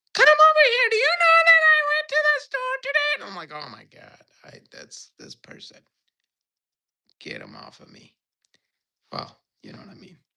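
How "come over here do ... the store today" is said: put-on loud, shrill, squeaky girly voice, very high. The speaker, who dislikes squeaky voices, demonstrates one: squeaky girl voice. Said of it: "When girls have squeaky voices".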